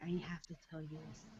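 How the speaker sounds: hushed, secretive, confiding half-whisper. Retelling what a boy half-whispered in her ear, retelling a half-whisper. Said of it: "he's whispering in my ear".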